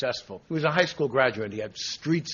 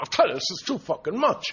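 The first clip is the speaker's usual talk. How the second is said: put-on exuberant comic voice, higher pitch; 6 semitones higher, 3 dB louder than usual. Retelling a friend's exuberant shout on a boat: imitating Rodney Dangerfield exuberant. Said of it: "like a happy cocker spaniel sticking its head out".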